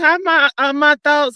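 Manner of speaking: normal talking voice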